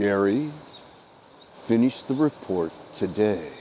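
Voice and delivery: stern, measured, cold, controlled anger. Retelling how a calm director speaks when angry: imitating a quiet angry voice. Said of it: "his voice gets quieter".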